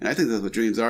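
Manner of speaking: excited yelling out.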